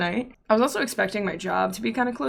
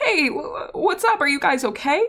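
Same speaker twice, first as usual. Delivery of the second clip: high, stumbling, casual tone, choked-down crying; 7 semitones higher, 3 dB louder than usual. Retelling a phone call to dad during tornadoes: imitating choking back tears. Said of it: "choke back my tears real quick".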